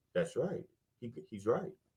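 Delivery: small, very hushed, tiny little voice. Retelling a guy fact-checking a set on his phone: imitating a little voice. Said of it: "I'd hear this little voice go".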